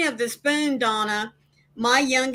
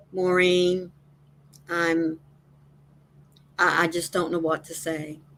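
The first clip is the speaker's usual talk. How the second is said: gentle, very calm, soothing voice; 5 semitones lower than usual. Retelling what a man said to Maureen while rocking back and forth, imitating a calm soothing voice. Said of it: "in a very calm, soothing voice".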